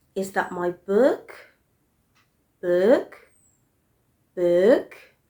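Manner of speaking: rising intonation climbing on book. Teaching intonation with yes/no question examples, rising intonation on last word. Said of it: "how my voice rises on the last stressed syllable".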